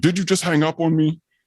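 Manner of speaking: very high-pitched, angry, indignant accusing tone. Retelling a mother calling back angry: imitating an angry mother. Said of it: "I can feel the anger".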